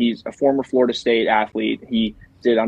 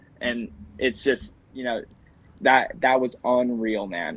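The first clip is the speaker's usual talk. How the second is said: usual speaking voice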